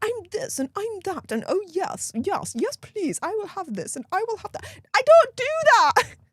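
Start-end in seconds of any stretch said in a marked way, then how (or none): 0.0-4.6 soft, put-on plummy upper-class English accent. A yorkshire speaker mocking how posh people talk: mock posh accent. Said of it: "I don't speak like a posh twat".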